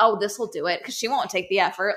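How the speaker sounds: spiteful voice dripping with venom. Imagining what a man in the story said: imitating a voice dripping with venom. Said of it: "his voice and just dripping with venom".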